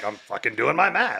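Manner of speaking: put-on curt, snappy, irritated and annoyed tone. Imitating the kids snapping back about their math homework: imitating kids' snappy tone. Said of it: "and then they get their tone".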